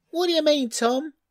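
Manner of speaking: loud, very high, squeaky little outburst. Daisy responds to Tom's boast about the pears: loud squeak. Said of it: "squeaked Daisy loudly".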